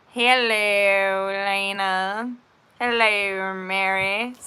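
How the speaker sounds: very slow, eerie, creepy drawl, words stretched out. Speaker greeting people by name, in a Salad Fingers voice. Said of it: "I don't know why I'm talking like salad fingers".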